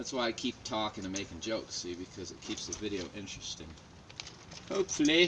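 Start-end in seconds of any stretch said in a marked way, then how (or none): 4.7-5.3 put-on British accent, high-pitched and loud. Narrating his own line while making a video, in a put-on British accent. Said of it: "he said in his best British accent".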